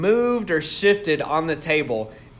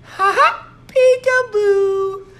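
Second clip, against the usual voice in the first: put-on shrill, very high-pitched, loud little child voice; 6 dB louder than usual. Retelling a voice that suddenly spoke in a quiet house: high-pitched kid voice. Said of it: "in this high pitched like kid voice".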